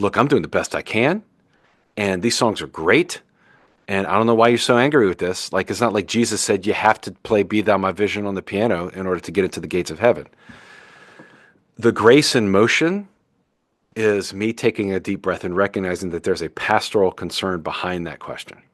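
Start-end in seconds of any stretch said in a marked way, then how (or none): none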